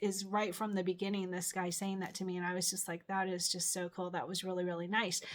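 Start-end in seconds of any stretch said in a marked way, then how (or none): none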